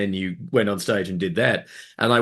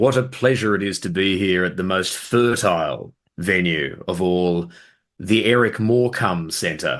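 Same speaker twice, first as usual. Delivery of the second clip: ordinary talk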